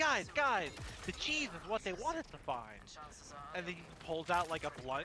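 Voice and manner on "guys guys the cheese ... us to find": big, swooping animated cartoon character voice. Retelling a Family Guy joke about Peter in a maze with mice: imitating Peter Griffin. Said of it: "He's like".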